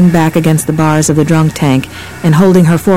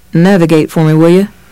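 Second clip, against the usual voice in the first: ordinary delivery, nothing marked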